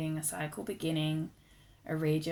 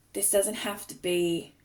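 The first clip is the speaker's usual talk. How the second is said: loud words spoken mid-yawn; 3 semitones higher, 5 dB louder than usual. Explaining creative energy to listeners, yawning while talking. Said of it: "sorry, I'm yawning".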